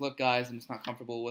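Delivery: normal talking voice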